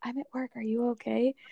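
put-on, imitated whisper. Imitating the other person whispering during their call, imitating a whisper. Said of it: "You were like whispering to everything".

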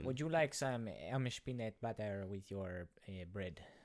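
sinister, put-on German accent. Joking about a sinister Deutschman character: attempted sinister Deutschman accent. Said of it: "I don't know how to do with that accent".

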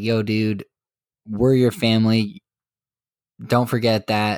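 put-on threatening tone. Retelling one character's warning to another, mock-threatening. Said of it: "In a pretty threatening manner".

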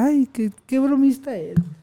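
light, ribbing tone. Retelling how his wife teased him laughing: imitating his wife teasing. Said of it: "Así me decía mi esposa".

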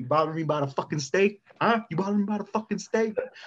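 furious yelling. Describing a movie scene where a man yells at his wife, imitating his yelling. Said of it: "he's yelling at his wife".

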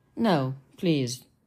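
said gently. Ultron encourages Pietro after Wanda tries to calm him, gentle. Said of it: "Ultron said gently".

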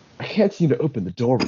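stock game-character npc-style line delivery. Retelling what he said when the door was closed on him, in a video game NPC voice. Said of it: "he like puts on this voice and he just says things like an NPC".

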